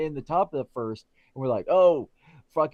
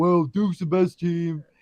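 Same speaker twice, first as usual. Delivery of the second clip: sad, mopey, mournful donkey voice; 2 semitones higher than usual. Imitating another speaker being sad every week about Duke: mock sad Eeyore voice. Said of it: "Your little Eeyore routine".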